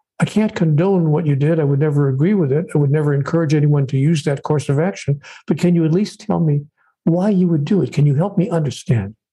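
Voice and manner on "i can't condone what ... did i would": plain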